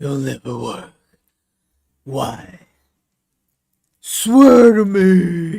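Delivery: very loud, bellowing vigilante voice, me stretched out.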